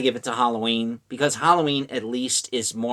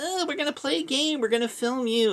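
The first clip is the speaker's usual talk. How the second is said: put-on very high, ditzy, silly girly voice. Describing a movie's plot, imitating dumb young girls. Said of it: "these dumb young girls that are like".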